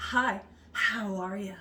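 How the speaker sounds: slowly drawn-out delivery.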